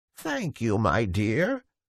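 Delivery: put-on weak, feeble, croaking old woman voice. Reading a fairy tale aloud, voicing an old beggar woman: feeble croaking voice. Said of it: "said the old woman in a feeble, croaking voice".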